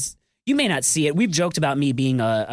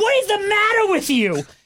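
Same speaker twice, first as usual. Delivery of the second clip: very high, loud, put-on New York yell; 5 dB louder than usual. Recounting a scene set in New York that drew an agent, retelling a New York-accent yell. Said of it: "yelling with this New York accent".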